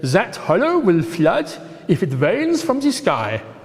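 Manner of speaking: bad put-on German accent with sing-song swoops. Quoting a local german man who walked past, use a terrible german accent. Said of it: "it's a terrible German accent, I know".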